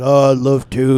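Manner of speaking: big, deep, booming voice, low, filling the room. Retelling meeting John Maxwell at a conference as he agrees to sign a book: John Maxwell big deep voice. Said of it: "that big old deep voice".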